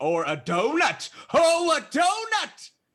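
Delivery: excited shouting. Guessing the world's shape with other players: excited yelling. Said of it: "Why are you yelling?".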